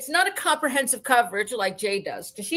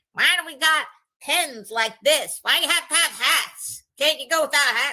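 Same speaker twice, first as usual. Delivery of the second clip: put-on cranky, complaining, crotchety old-man grumble; 2 semitones higher than usual. Imitating an old commentator from Sixty Minutes: imitating a cranky old man. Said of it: "he was all cranky and old".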